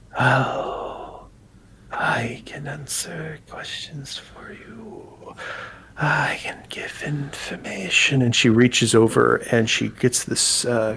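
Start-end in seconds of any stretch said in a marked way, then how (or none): 0.1-8.2 whispered, slow, high, drawn-out voice. Voicing a pale-skinned character offering to answer questions: whispering character voice. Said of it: "again kinda whispers carry on".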